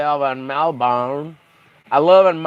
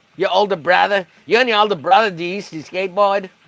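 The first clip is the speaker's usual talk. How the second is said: horrible, badly done mock Australian accent; 4 semitones higher than usual. Speaker riffing at Corey, in a horrible fake Australian accent. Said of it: "that's a horrible fucking Australian accent".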